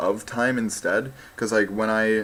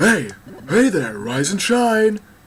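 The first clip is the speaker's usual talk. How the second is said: loud, high-pitched creature yell; 8 semitones higher, 5 dB louder than usual. Voicing a game character waking the player up: yelling Loudred voice. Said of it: "that's the character why I'm yelling".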